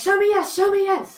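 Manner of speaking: very high, loud, repeated yelling. Imitating unsure beginners commanding their pendulums: imitating someone yelling. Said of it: "So they're yelling like".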